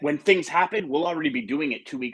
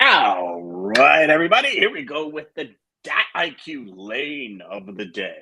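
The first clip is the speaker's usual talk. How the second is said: put-on deep radio host announcer voice; 3 dB louder than usual. Speaker introduces the segment of the day to everybody, in a deep radio voice. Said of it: "That was a total radio voice right there. You see how deep I went?".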